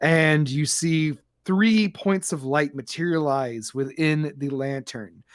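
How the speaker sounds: usual speaking voice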